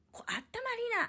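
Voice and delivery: high, hushed whisper, said as an aside.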